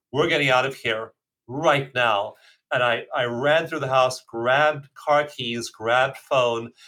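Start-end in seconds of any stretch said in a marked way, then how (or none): none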